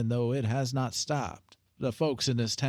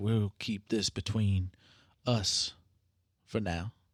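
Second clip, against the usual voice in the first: imitated muttering under breath, lower, slower; 4 semitones lower than usual. Retelling what the woman hiring him said, imitating her talking under her breath. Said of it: "she does talk under her breath".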